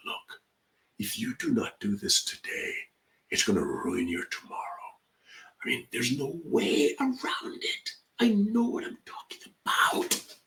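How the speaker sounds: hushed whisper, tone taken down, leaning in. A speaker shows how a presenter leans in to the audience, whispering. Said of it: "took the tone down and whispered".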